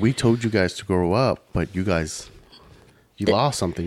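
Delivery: ordinary delivery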